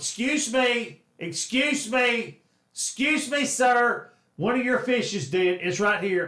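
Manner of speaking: pushy, complaining woman's voice. Retelling a woman complaining about a dead fish: imitating a nagging Karen. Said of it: "was being a Karen".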